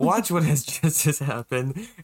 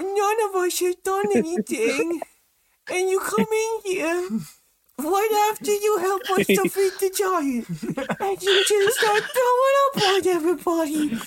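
put-on little gnome girl voice, higher pitch. Voicing a small gnome girl confronting the group: small gnome girl voice. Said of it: "a small gnome little girl walk up to the group of you and go".

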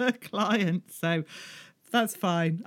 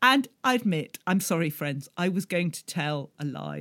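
ordinary delivery

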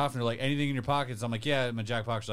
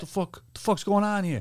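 put-on Jersey mobster voice; 7 semitones higher than usual. Telling a friend about a loud bald guy at the airport, Sopranos-style New Jersey voice. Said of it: "He was straight out of The Sopranos".

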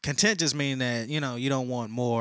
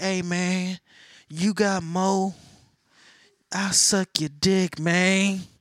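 raised, pitched-up, strung-out crackhead voice; 8 semitones higher, 5 dB louder than usual. Picturing someone fiending for more, imitating a crackhead. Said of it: "like a crackhead".

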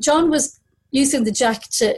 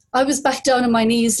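ordinary delivery

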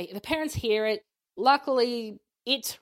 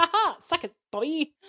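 put-on gloating, much higher, slower; 7 semitones higher than usual. Recapping a plot where the plates come off the car, imitating Dean gloating. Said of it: "Dean's very happy".

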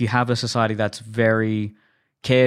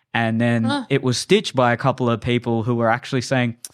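ordinary delivery

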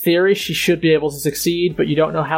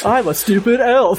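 high, deliberately horrible mocking elf voice; 6 semitones higher, 4 dB louder than usual. Teasing someone who hates elves, mimicking their Elfish: mocking horrible elf voice. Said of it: "make it sound more, like, just horrible".

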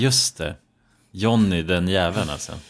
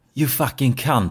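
put-on natural British accent, high-pitched; 5 semitones higher than usual. Retelling what a man in the corridor said: imitating Johnny's British accent. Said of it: "riktigt som brittisk".

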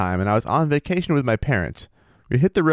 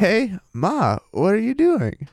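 uneasy but affectionate, nervous and warm, rising pitch; 9 semitones higher than usual. Redoing what they once said to their mom, in a mock-nervous yet warm voice. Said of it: "Let's see if I can do the nervous yet".

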